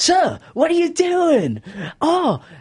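giddy high squeal. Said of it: "He's like".

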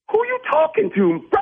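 high, sharp, indignant tone.

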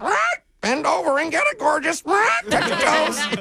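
very high, squeaky pet voice. Telling a story, voicing the pet Nibbles: squeaky Nibbles voice. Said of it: "Nibbles squeaked".

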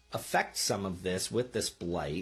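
ordinary delivery

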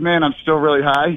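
normal talking voice

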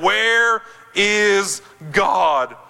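mock, very stern, demanding preacher tone. Telling a story, the speaker repeats a pastor's question to a boy, retelling it sterner. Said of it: "repeated the question in an even sterner voice".

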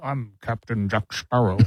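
put-on pirate voice with a Scottish accent. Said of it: "sound like you're doing a Sean Connery impersonation".

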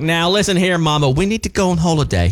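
put-on rural country accent. Imitating a niece from West Virginia talking to her mother, in a country accent. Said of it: "She'd be all country".

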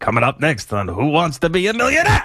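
swooping, sing-song announcer voice, pitch swinging. Doing an impersonation of a game show host: Regis Philbin impression. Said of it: "the Regis impersonation".

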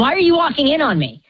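fast, high-pitched yelling. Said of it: "I start yelling at my dad".

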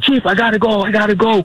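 piercing, very high-pitched screaming. Retelling a pilot's words during a sighting: imitating someone screaming. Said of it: "He's screaming".

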